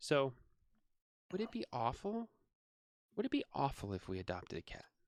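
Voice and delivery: acted, really timid, soft and hesitant. Retelling a phone call from Becca, imitating Becca's timid voice. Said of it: "in this like really timid voice".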